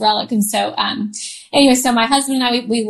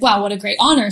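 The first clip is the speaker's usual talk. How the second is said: ordinary delivery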